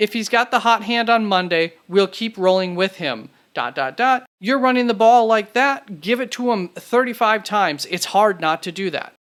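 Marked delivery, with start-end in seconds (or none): none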